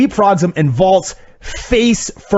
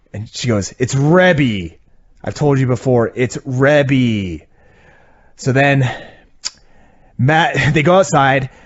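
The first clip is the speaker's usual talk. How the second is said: normal talking voice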